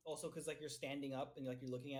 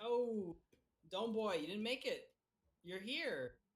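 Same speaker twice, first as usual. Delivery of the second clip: mock, slow, drawn-out, pitched-up taunting jeer; 6 semitones higher, 4 dB louder than usual. Voicing three members who gang up on an arriving member: hounding someone. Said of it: "fucking hounding him".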